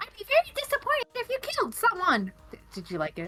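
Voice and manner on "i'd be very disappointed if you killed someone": very high, animated, swinging, swooping sing-song voice. Doing an impression of Desiree's line just said by another player. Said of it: "let me do my impression of Desiree".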